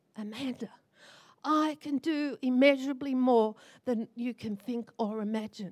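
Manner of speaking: firm, forceful, soft but strong half-whisper. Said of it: "He whispered it".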